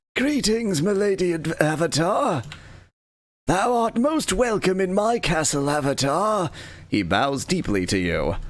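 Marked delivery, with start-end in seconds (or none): 0.1-6.5 rasping, rough-edged knight voice. Reading out a game character's lines who greets the avatar: raspy voice. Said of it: "He speaks in a raspy voice".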